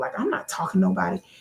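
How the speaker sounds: ordinary delivery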